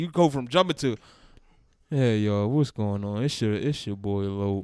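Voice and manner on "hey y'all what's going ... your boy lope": mock dry, lifeless, low delivery. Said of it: "that was dry as shit".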